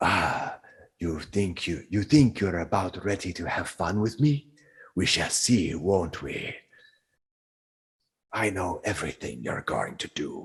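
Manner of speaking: low, disembodied voice coming from all around. Voicing a voice heard all around the area, taunting the players: disembodied voice all around. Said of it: "the voice says".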